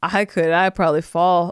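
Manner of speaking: put-on weary, world-worn voice. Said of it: "like she had lived a thousand lifetimes".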